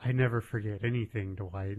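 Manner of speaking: put-on menacing, evil tone. Retelling a TV scene where Kelly hugs Dwight, imitating Kelly's evil tone. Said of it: "she has this really, like, evil tone".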